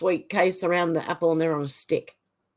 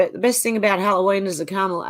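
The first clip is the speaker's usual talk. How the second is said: ordinary delivery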